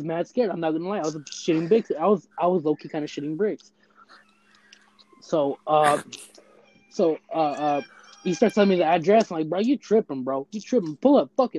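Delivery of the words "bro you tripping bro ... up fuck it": play-acted, heated, pissed-off angry tone. Retelling own reply to a prank caller: imitating own angry reply. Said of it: "I was pissed".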